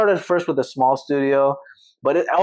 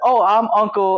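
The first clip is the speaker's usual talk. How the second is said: put-on friendly, warm country accent with pitch raised; 7 semitones higher, 3 dB louder than usual. Retelling how a caller's uncle asked about his niece: imitating uncle's country accent. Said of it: "I can do country accent".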